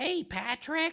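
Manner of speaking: very high, loud, squeaky cartoon voice. Asked which voice to do, the speaker tries a SpongeBob voice. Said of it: "I could try to do SpongeBob's voice".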